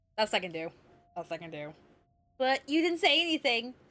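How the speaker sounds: ordinary talk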